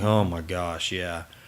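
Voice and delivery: slow, proud tone, acted out. Retelling how people answer whether they've been busy: imitating a proud "busy" tone. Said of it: "you say it with that tone like".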